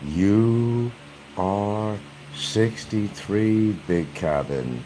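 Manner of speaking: very slow, each word deliberately spelled out. Saying it again to Big Cabin so he catches on: very slow. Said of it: "I'm going to say it very slowly".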